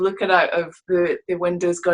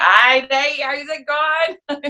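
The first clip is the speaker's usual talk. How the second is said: put-on very slow, broad Scottish accent, pitched up; 7 semitones higher than usual. Retelling how they greet their mum and dad: imitating own Scottish home accent. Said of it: "As soon as I talk to my mum and dad, I'm like".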